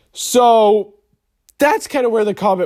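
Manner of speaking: voice breaking mid-phrase, suddenly jumping high. Commentary video speaker mid-sentence, voice cracking. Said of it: "that was a shocking voice crack".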